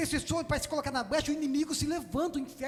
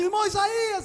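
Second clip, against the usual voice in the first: mock, loud, high-pitched call, calling out aloud; 5 semitones higher, 6 dB louder than usual. Retelling how a man called out from his car, imitating a loud call. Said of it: "E ele diz assim bem alto".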